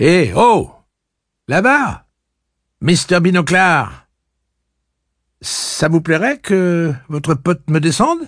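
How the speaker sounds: very high, loud, good-humored call. Cuthbert calls over to a man about his friend, raising his voice good-humoredly. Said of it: "élevant le ton avec bonne humeur".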